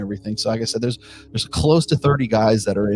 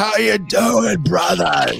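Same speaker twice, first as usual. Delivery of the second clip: put-on, slightly drunk, tipsy voice, higher; 10 semitones higher, 3 dB louder than usual. Voicing a big drunk man in a bar greeting the players: acting a little drunk. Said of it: "you can tell he's a little bit drunk".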